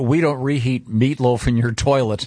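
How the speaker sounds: normal talking voice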